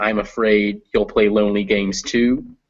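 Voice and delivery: ordinary talk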